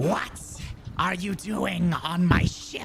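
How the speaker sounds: harsh, screeching creature voice. The game master voices a creature screeching down at the players: screeching creature voice. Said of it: "It screeches down at you".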